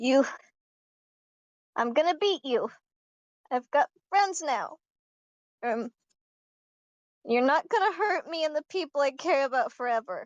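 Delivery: trembling, shaky, tearful high voice. A girl faces a screaming bunny and answers it, shaky, tearful voice. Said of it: "with a very shaky voice and tears in her eyes".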